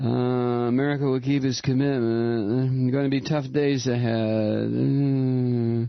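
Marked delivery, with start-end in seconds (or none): 0.7-4.6 dreamy, sloppy, detached, disconnected tone. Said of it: "the kind of dreamy, sloopy, sloppy kind of".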